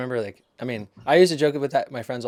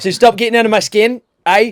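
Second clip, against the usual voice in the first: fake Australian accent, much louder, higher; 9 semitones higher, 9 dB louder than usual. Demonstrating the accent the speaker once faked as a kid, put-on Australian accent. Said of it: "Australian accent".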